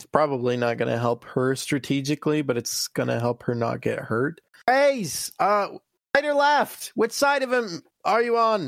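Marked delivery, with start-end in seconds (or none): 4.7-8.7 very high-pitched shout, as if across distance. Voicing a character calling out to an ally in darkness: yelling out to Raze. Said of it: "Harry's gonna yell out to Raze".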